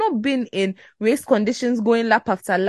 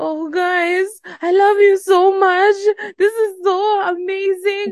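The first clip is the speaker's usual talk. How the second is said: very high, slow, drawn-out crying speech; 10 semitones higher than usual. Retelling a driver's emotional radio message, imitating Théo Pourchaire sobbing. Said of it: "who sob? Like".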